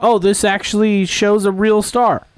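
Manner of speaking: usual speaking voice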